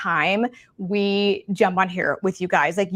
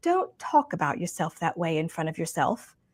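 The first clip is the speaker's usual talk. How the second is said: put-on soft sweet British accent; 3 semitones lower, 7 dB quieter than usual. Retelling what a woman said after you insulted your own hair, use Lorraine Massey's sweet British accent. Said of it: "in her sweet British accent".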